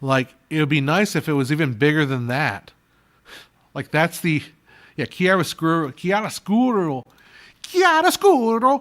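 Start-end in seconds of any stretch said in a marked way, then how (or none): 5.1-8.8 exaggerated put-on Italian accent, sing-song. Talking about lighting, the speaker repeats the word in an over-the-top Italian accent. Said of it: "go over the bo- top with the Italian accents".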